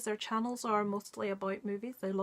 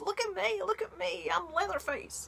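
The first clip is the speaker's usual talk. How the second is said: put-on childish voice, higher; 10 semitones higher than usual. Quoting a favourite film line without the knife prop: childish Mick voice. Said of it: "in a really childish voice it goes".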